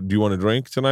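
usual speaking voice

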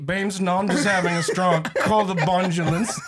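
put-on slurred, garbled speech. Acting out a favorite meme, imitating slurred stroke speech. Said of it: "if you have a stroke and talk like that".

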